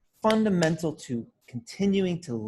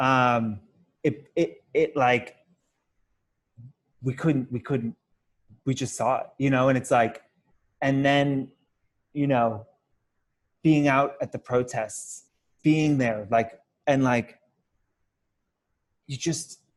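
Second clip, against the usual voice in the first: choked-up, stumbling talk, voice catching as emotion rises. Describing seeing a man murdered and being at protests, getting emotional. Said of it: "now I'm gonna get emotional".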